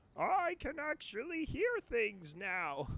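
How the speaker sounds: high, swooping cartoon alien voice, pitched way up.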